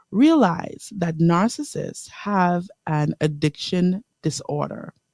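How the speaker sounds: slow, deliberate reading. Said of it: "And I'll say that slow".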